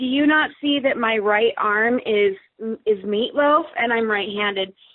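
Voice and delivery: ordinary delivery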